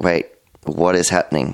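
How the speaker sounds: ordinary talk, nothing marked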